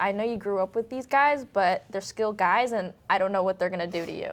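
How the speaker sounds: plain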